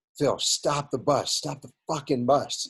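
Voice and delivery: mock yelling, high-pitched. Recounting a story of one man yelling at another, retelling a yell. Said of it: "Samaki Walker yells at Phil Jackson".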